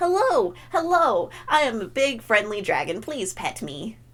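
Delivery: very cutesy, high, friendly dragon creature voice. Acting out the fursuit dragon character greeting people: loud and very cutesy. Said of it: "an excuse for me to be loud and very cutesy".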